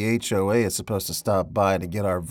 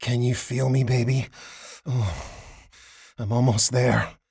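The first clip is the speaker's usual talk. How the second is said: deep groan like a wounded bear; 3 semitones higher than usual. A man in a scene, sounding like a wounded bear crossed with a dying tiger. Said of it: "sound like a cross between a wounded bear and a dying tiger".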